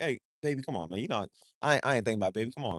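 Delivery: soft, smooth, suave flirting tone. Speaker acts out his smooth game from his player days: imitating smooth pickup talk. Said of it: "to come in and be like".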